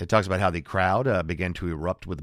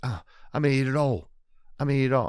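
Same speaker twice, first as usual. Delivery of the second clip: put-on British accent, pitched up, storyteller style; 6 semitones higher than usual. Retelling a comedian's bit about the inventor of ice cream, quote him in a British accent. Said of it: "He always does the British accents".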